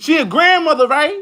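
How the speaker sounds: very high-pitched, shrill yell. Chatting with friends about an old acquaintance, yelling. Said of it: "Why you yelling?".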